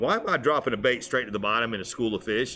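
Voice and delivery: ordinary talk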